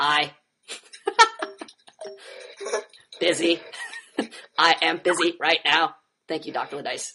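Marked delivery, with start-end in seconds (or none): 0.0-6.0 very slow read-aloud voice with swooping pitch. Speaker reading out another participant's reply aloud in a Stephen Hawking voice. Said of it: "in my Stephen Hawking's voice".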